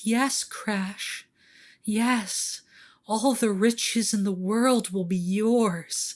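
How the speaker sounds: delicate, dainty, high little voice. Narrating to the listener the voice in the back of their mind, a dainty little whisper. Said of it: "this little dainty little whisper that says".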